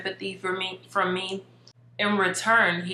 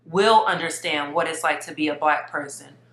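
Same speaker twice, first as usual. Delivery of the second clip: ordinary talk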